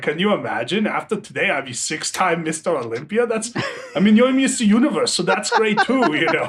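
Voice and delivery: passive-aggressive, feigned niceness with a dig. Retelling a rival's remark on the morning of a competition: passive-aggressive Schwarzenegger impression. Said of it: "he says it like so passive aggressively".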